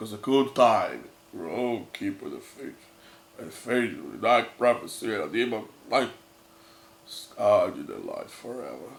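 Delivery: low, deep, dramatic spoken English narrator voice.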